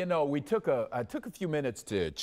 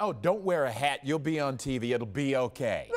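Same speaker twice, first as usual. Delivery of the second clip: ordinary talk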